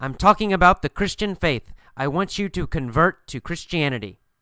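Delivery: normal talking voice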